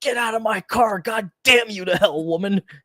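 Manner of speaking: put-on high, furious screaming of a man losing it. Describing a video of an Uber driver yelling at a woman, imitating his screaming. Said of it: "screaming at her to get out of".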